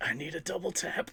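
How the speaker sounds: feeble, failing voice. Voicing a hurt bird lying on the floor: put-on weak voice. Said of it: "weakly saying".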